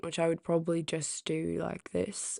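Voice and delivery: quick, soft male British accent. Listing the voices they can do, the speaker demonstrates a male british accent. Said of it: "I do a male British accent".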